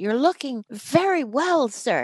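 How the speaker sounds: put-on Irish accent. Ronan visits the speaker's dad on the day he is dying and addresses him in Ronan's Irish accent. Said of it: "in his Irish accent".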